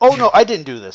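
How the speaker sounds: loud, sweeping, offhand sarcastic delivery.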